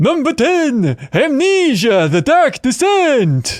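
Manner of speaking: vampire voice, very slow, drawn-out, high pitch. Reading a game's name for a countdown in a voice co-hosts chose, Count Chocula voice. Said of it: "Count Chocula".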